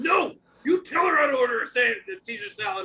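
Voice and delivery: mock angry chef voice. Retelling what a chef said: imitating an angry chef. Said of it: "typical just angry chef".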